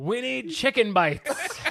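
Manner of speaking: put-on high, slurring, drunk-sounding speech. Retelling a drunk friend stumbling to the counter: imitating drunk slurred speech. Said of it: "she fucking slurs".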